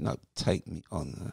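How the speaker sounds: ordinary delivery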